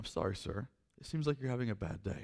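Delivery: hushed, very quiet and apologetic. Retelling how a young woman at a desk answered an angry man, speaking quietly. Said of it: "she just very quietly said".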